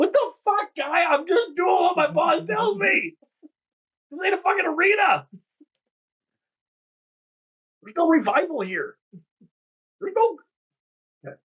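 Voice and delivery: tiny, very high, pitched-way-up halfling voice. Game master voicing a halfling heard inside after an attack: little halfling voice. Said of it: "you hear a little halfling voice inside".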